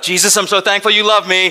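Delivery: very high, loud, desperate panicked cry. Recounting the moment a driver pulled across two lanes of traffic: retelling calling out. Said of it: "I literally called out".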